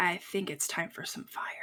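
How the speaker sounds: quiet whisper. Whispering in character to another party member about using fire: whispering in character. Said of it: "I wanted to whisper to".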